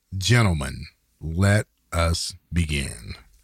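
grand, overly dramatic, theatrical delivery. Redoing the show's opening line after trying again: overly dramatic delivery. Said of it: "so dramatic!".

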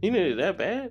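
put-on dismissive disbelief. Retelling how a man reacted to a $41 request; imitating dismissive disbelief. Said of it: "But the way he said it, you would thought I would say 41 cent".

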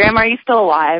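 ordinary talk, nothing marked

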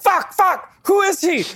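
very high, long, stretched-out, drawn-out scream. Imitating Alfred Hitchcock yelling at his staff: imitating Hitchcock screaming. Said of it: "he's just screaming at people to go find the girl".

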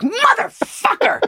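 very high, furious, mad parrot voice. Retelling the parrot getting mad at the man: imitating an angry parrot swearing.

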